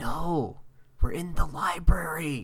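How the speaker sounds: hushed whisper. [name] answers Ryan in a library skit, whispering. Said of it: "You have to be quiet".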